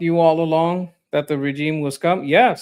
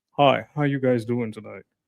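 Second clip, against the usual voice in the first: put-on on-air radio announcer delivery; 6 semitones lower, 4 dB quieter than usual. Greeting the stream audience in a radio announcer voice. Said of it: "this is my radio voice".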